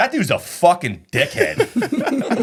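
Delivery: blunt, very slow delivery. Retelling what the next guy said about a nearby customer, retelling a loud remark. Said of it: "Loud as fuck".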